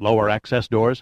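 plain

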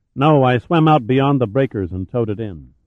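ordinary talk

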